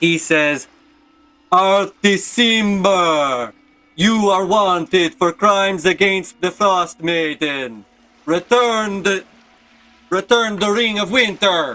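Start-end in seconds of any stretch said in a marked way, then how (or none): 1.5-11.7 giant voice, pitched high. A game narrator voices the Frost Giant shouting across the chasm, booming frost giant voice. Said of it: "he shouts out his booming voice across the chasm".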